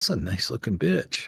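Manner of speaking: under-the-breath mutter. Retelling a remark made at a loud bar: imitating muttering under breath. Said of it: "just under his breath".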